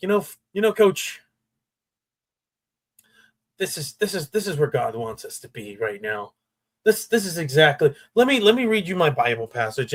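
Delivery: halting speech, stopping and restarting with repeats. Acting out a player approaching the coach after a loss: imitating Fernando Mendoza. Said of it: "He's like".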